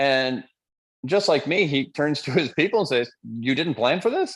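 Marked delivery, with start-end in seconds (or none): 3.2-4.4 put-on Yiddish-inflected accent.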